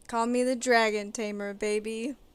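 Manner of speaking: deadpan, level, straight-faced, trying not to crack. Saying an in-character line while trying to keep a straight face. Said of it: "try to say this with a straight face".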